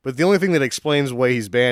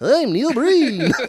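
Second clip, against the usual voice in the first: silly put-on helium voice, higher pitched; 12 semitones higher than usual. Joking that the helium tanks give Neil Breen a silly helium voice as Neil Breen. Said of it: "he's gonna have a silly voice if they're plugged in".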